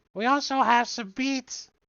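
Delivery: put-on very high, shrill little old lady voice. Narrating a character inviting the adventuring party to dinner, in [name]'s little old lady voice. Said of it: "she's a little old lady. She says".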